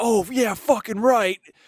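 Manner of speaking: high, acted-out yell. Retelling a man at a game who turns and yells: imitating a man yelling. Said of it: "he's just, like, yelling".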